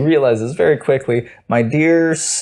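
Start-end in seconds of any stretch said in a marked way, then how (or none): 1.5-2.4 put-on stammer, higher pitch. Retelling a father reading a letter to his son: imitating a stutter. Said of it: "and he stutters".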